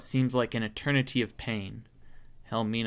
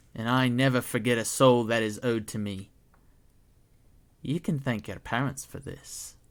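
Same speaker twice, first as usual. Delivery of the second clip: menacing, gloating hag voice. Helmina the hag claims the soul she is owed: Helmina the hag's voice. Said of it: "but are only met with the low chuckling of the hag bearing down on your soul. / You see a the true terrible sickly purple face of [name], ... but are only met with the low chuckling of the hag bearing".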